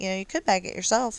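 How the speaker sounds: sassy, cheeky delivery. Retelling own comeback to a rude couple: imitating own sassy remark. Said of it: "I was feeling sassy".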